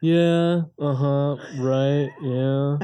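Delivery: very slow, stretched-out drawl on filler words. Retelling how she mimics the way you talk, in a male Kardashian voice. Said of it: "you almost sound like a male Kardashian".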